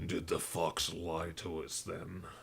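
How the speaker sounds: much heavier, deep, menacing, threatening tone. A narrator voices one of two figures in a dungeon, much deeper menacing voice. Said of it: "the much deeper, more menacing voice says".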